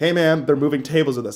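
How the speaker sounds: ordinary talk, nothing marked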